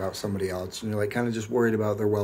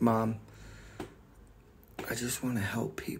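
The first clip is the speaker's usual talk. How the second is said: whispery, breathy, tearful pleading; 7 dB quieter than usual. Retelling crying to Mom before going upstairs, imitating own crying. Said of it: "and I started crying".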